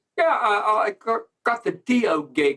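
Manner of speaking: put-on very slow, high, drawled childlike English accent. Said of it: "sounded like a child talking, but in an English accent".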